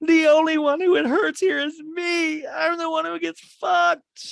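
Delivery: acted, loud, shrill, very high tearful screaming. Recapping a reunion show, imitating someone screaming in tears. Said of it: "Kyle screaming in tears".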